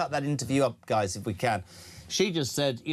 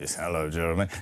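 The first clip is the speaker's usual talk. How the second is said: fake ill-sounding voice; 9 semitones lower than usual. Showing callers how to call in with a fake sick voice. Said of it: "Not your sickest voice like that".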